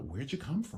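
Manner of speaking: lilting upspeak with the ending lifted. Retelling how the costumed elves greeted visitors: imitating elves' upspeak. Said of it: "the people are like".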